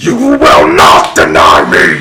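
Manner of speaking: very low, growling demon voice. As the narrator, voice the demon answering her, in a growling demon voice. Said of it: "the demon just growls and goes".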